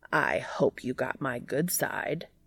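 low, gravelly, gruff, irritated voice. Reading a story aloud, a character speaks from above: low gravelly annoyed voice. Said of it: "a low, gravelly, and clearly annoyed voice says".

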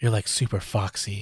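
soft, close, flirty whisper. Retelling a scene where a man leans in to a woman: imitating a whisper. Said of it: "he leans in and whispers in her".

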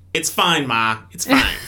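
put-on Boston accent, dismissive tone. Retelling a man brushing off his parents' advice, in a Boston accent. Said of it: "With the Boston accent".

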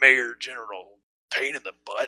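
muttering under breath. A game master voices a character as the players walk away, muttering under his breath. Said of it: "you hear him mutter under his breath".

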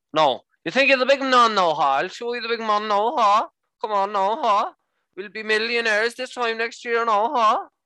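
put-on very particular Irish accent. Show how your Irish friend talks while he may be listening, imitating Niall's Irish accent. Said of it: "I've got a friend who's Irish called Niall".

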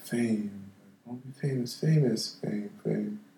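slow half-whisper, each word stretched out. Recounting freezing and staring during a performance, then retelling a half-whisper. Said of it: "I would start whispering like".

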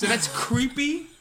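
ordinary talk

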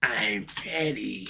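put-on small, annoying whispered child voice. Mocking how someone used to act, doing the annoying Freddy voice. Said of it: "Freddy voice was so fucking annoying".

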